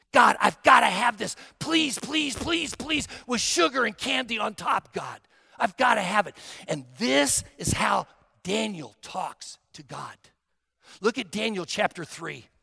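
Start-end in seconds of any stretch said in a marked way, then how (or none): 0.1-6.3 intense earnest pleading. Speaker demonstrating to listeners how to ask god for something in a crisis, intense pleading. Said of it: "he listens for the intensity in your voice".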